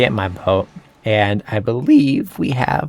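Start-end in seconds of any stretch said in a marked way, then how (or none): 1.0-2.9 slow words, voice breaking and cracking mid-phrase. Player narrating their game, voice cracking. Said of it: "holy voice crack".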